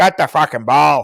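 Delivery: loud, put-on Northern Irish accent, shouted. Imitating a player shouting at people on the pitch, Northern Irish accent, shouting. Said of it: "That's meant to be a Northern Irish accent".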